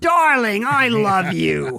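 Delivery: weird voice, very slow and drawn out. Imitating a silent film actress who had a weird voice. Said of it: "She talks like this".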